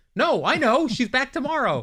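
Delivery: put-on very high, loud, drawn-out yell. Retelling what was yelled out after Whoopi said nobody knows: retelling own past yell. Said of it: "which point I yelled out".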